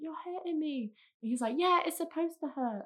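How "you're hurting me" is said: restrained cry of pain and complaint. Retelling home yoga, when someone pushed her leg back: retelling shouting at him. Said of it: "I'm shouting at him like".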